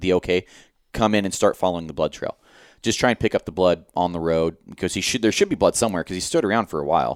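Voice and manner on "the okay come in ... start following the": ordinary delivery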